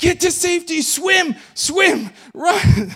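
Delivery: very high, very loud, panicked and frantic yelling. Retelling how a man ran out toward them, imitating a frantic shout. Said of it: "frantically shouting".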